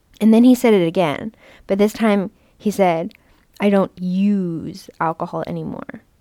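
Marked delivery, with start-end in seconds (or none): 3.6-6.0 mock smug, slow, use stressed and drawn out. Speaker retelling what their dad said about not drinking, mock-smug, stressing 'use'. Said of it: "with an emphasis on the word use and a tone of smugness".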